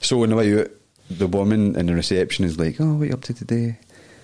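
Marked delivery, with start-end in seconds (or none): 2.8-3.8 put-on well-to-do, refined Bearsden lady's accent. Retelling the osteopath's receptionist speaking to him on his way out: posh woman voice. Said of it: "Pure posh woman for Bearsden".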